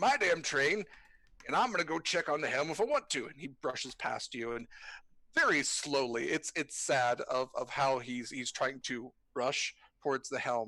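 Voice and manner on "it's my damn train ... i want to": stubborn, firm, unswayed insistent tone. Voicing Morag pushing past to check on the helm: Morag voice. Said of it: "He's like".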